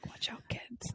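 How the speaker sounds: soft, playful whisper.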